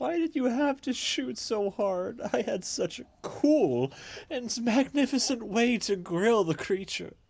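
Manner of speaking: very high, loud, sulking, pouty grumble. After the creature swims away, Sydney goes up to Marread, pouty Sydney voice. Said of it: "uh, [name] is being all pouty. / He goes up to [name] and like tells her".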